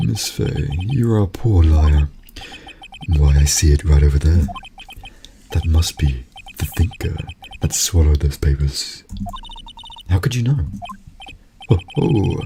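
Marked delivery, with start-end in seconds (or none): 11.7-12.4 odd, strange put-on villain laugh. Voicing a villain's laugh, an odd laugh. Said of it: "what kind of laugh is that".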